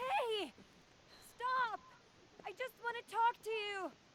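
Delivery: shouting. A character calls out to someone she wants to talk to, yelling. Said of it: "Who are you yelling at?".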